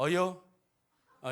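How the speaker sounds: put-on Chungcheong dialect accent. Demonstrating regional greetings one by one, doing the Chungcheong dialect. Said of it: "충청도 ... 이렇게 한다고 그래요".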